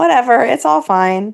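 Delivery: mock casual, nonchalant, emotionless, no-feeling tone. Retelling how Jason corrected someone: imitating a nonchalant tone. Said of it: "Jason's just like".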